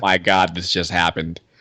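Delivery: put-on panic, fast, words tumbling out, rattled off. Retelling own reaction to saying yes to a date: retelling own freaking out. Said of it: "freaking out".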